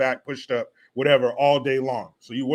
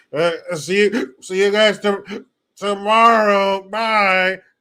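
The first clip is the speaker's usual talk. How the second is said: put-on drunk ancient demon voice, high, loud and raised; 7 semitones higher, 6 dB louder than usual. Acting out Pelosi going up to her house, Nancy Pelosi impression. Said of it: "I'm going to do my impression of Nancy Pelosi".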